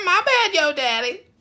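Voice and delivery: very high, slow, heavy nasal tone. Apologizing after hearing stupid stuff, hard nasal voice. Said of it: "generally I go hard nasal".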